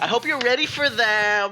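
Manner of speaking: put-on, very high valley girl voice. Describing the voice they'd use for their speech notes, doing a Valley Girl voice. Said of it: "I would do this voice though. / The Valley Girl".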